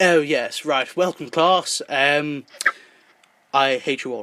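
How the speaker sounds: posh English accent, laid on heavily. Showing how Professor Michael Xavier could have spoken: posh English voice. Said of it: "And you could have spoken like this".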